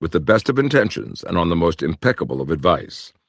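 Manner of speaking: ordinary talk, nothing marked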